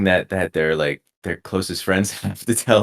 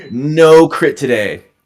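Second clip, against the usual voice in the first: furious ranting voice, higher and louder; 7 semitones higher, 9 dB louder than usual. Retelling a professor's reaction to a painting critique: imitating an angry professor. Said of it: "And he was mad".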